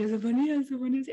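put-on voiceless yell. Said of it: "según yo gritaba fuerte, pero era como que no, no me salía la voz".

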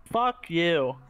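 put-on, all-in, full-on Boston accent. Asked to do an american accent, a player tries a put-on boston accent. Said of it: "You went full Boston".

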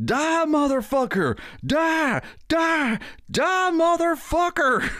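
very high, drawn-out, all-out screaming. Describing a play, the speaker acts out a line from it, imitating Joe screaming. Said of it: "Joe screams out, like, all caps".

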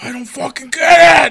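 put-on angry yelling. Retelling what Belly shouted when everyone told him to calm down, imitating Belly's furious yell. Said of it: "he's just like going all crazy".

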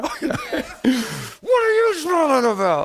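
very high, slow, swooping, irritated voice. Retelling how people get mad when someone smiles, imitating a mad person. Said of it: "people are mad because you smile".

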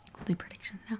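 hushed whisper. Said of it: "I don't know why you whispered that".

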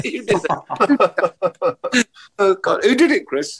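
high, laughing, giggling through the words. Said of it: "Compose yourself".

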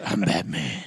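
mock low gravelly growl. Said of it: "that stupid fucking voice".

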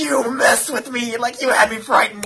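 put-on breath in. Retelling how a man reacted on learning it was a joke; imitating Jacob's little inhale. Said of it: "He has a little, like, inhale".

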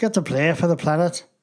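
fast, rattled-off mock Irish accent.

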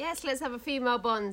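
ordinary delivery

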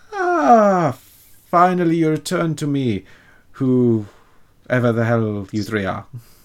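showy, swooping, high voice, drawn-out ah. Game master voicing the tiefling fight promoter greeting the returning players: grinning greeting. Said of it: "greets you with this massive toothy grin".

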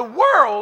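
voice cracking. Speaking to an audience about pain, voice cracking. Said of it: "excuse my voice there".

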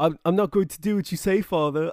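put-on British accent. Imitating the kid of a show character defying his father: british accent. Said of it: "He didn't even have a British accent. I just did that".

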